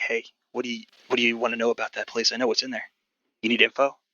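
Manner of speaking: whispered speech. Narrating as Sam, who gets close to Tacitus and speaks, whispering. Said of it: "and he whispers at you".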